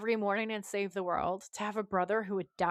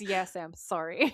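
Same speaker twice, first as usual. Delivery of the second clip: put-on smug, self-satisfied tone. Retelling a character's reply after taking someone's partner, imitating a smug tone. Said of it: "so smug".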